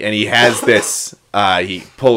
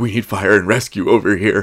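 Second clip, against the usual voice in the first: very serious, dead serious voice. Retelling a story, the speaker quotes Captain America in a serious Captain America voice. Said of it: "in his like really serious voice".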